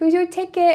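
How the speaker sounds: put-on high little babyish voice. On a live stream, the speaker repeats how Riley says the line: imitating Riley's baby voice. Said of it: "and her little baby voice".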